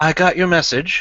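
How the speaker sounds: put-on soft-spoken slight Southern American accent. Voicing a newcomer who walks into a bar: soft slight Southern American accent. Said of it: "he speaks softly with a, with a slight Southern accent".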